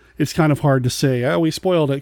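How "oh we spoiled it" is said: ordinary talk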